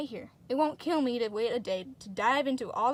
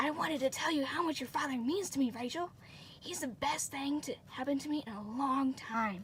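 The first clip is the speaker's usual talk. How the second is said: loud, hushed private stage whisper; 5 dB quieter than usual. Reading a scene where a character pulls someone aside: loud whisper. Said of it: "says in a loud whisper".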